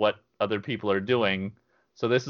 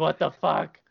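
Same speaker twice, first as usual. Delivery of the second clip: put-on high-pitched, freaked-out outburst; 7 semitones higher than usual. Speaker recounts someone getting hit with an arrow, retelling another person freaking out. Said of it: "Sarah's just totally freaking out".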